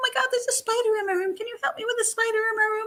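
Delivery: put-on very high, helpless little-girl voice. Recalling how she always needed help, imitating her childlike voice. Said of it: "she would talk like this all the time".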